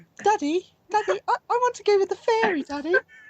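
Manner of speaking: very high, botched, clumsy woman's voice. Voicing a character who calls to her father: attempted woman's voice. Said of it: "can't do a woman's voice".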